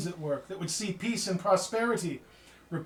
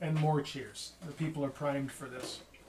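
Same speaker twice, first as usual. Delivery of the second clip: ordinary delivery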